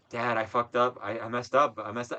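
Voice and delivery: panicked, frantic, freaking-out delivery. Retelling a prank call, imitating Kelsey freaking out to her dad. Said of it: "she's like freaking out".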